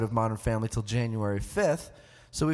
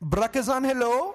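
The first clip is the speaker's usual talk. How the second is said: put-on Indian accent, very high; 11 semitones higher than usual. Answering a prompt to say hello like people from India: put-on Indian accent.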